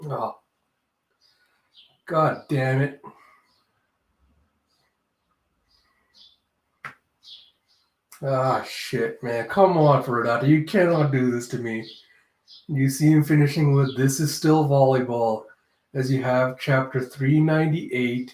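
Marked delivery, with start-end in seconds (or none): 0.1-11.9 near tears, overcome, on the verge of crying. A reader reacting to chapter 398 of a volleyball story, near tears. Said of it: "I'm gonna start crying".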